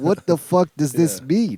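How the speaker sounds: normal talking voice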